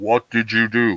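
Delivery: put-on echoing voice. Acting out God asking a question: God in a director's voice with echo. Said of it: "like a director's voice or too much echo".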